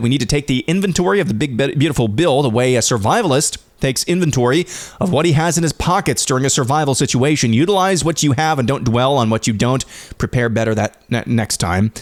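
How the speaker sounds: ordinary delivery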